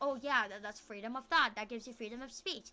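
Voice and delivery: ordinary delivery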